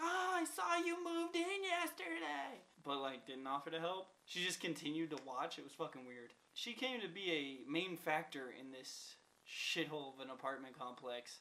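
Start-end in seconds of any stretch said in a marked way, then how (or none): 0.0-2.6 acted, very high, drawn-out called-out voice. Retelling what a neighbor called across to a girlfriend: imitating a neighbor yelling. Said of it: "she yelled to my girlfriend".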